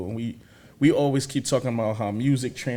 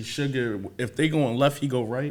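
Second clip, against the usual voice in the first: normal talking voice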